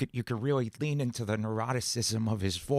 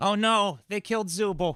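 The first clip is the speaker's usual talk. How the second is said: put-on higher-pitched character voice with Brooklyn accent; 9 semitones higher, 4 dB louder than usual. Speaker voicing a character's line in a roleplay, in Jax's Brooklyn accent. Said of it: "I keep giving Jax like a Brooklyn accent".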